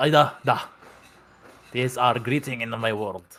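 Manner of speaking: fake Russian accent, laid on thick. Voicing a character giving a greeting in the game: put-on Russian accent. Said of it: "why am I Russian? I'm supposed to be German".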